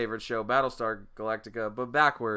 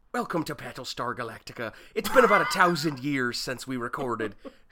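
weak, bad put-on Irish accent, barely held. Told to just say the few words they know, speaking in an irish accent. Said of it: "I only know how to say like three words in an Irish accent".

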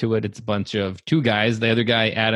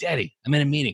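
put-on young girl voice, higher pitch; 5 semitones higher than usual. Retelling how a daughter mimicked her father: imitating his daughter mimicking him. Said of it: "she's in here mimicking me like".

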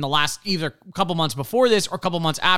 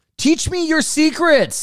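acted, very high-pitched, full-throated yell; 11 semitones higher, 4 dB louder than usual. Talking about a game console, yelling at it. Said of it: "I'm yelling at it now".

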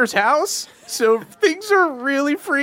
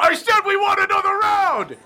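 high-pitched, loud shouted yell; 8 semitones higher than usual. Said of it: "the bigger dude, uh, yells out".

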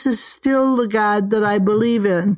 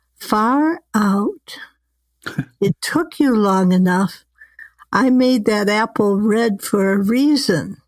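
sweet, honeyed, smooth and mellifluous voice. Telling the Adam and Eve story, voicing the voice from the parted skies, mellifluous. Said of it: "a mellifluous voice says".

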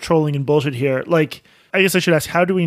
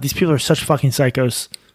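normal talking voice

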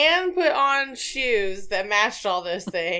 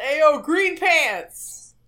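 loud, drawn-out hollering yell; 6 semitones higher, 5 dB louder than usual. Retelling how a guy on the street catcalled: imitating a man yelling. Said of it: "And the guy yelled".

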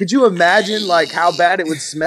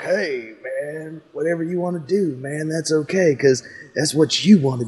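laid-back, relaxed surfer drawl; 3 dB quieter than usual. Mocking an actor's laid-back manner: laid-back Matthew McConaughey voice. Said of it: "he's just this laid back".

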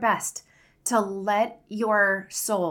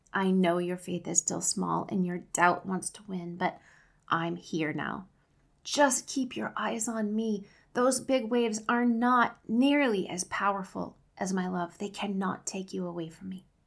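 put-on soft, tender, loving whisper; 4 dB quieter than usual. Speaker imagines comforting words whispered like a mother to her child, acting out a tender whisper. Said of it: "like a mother would pull her little child close and whisper".

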